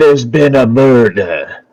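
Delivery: put-on southern drawl. Storyteller voices a character in the scene, in the Knives Out detective accent. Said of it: "in the same accent as our as our man".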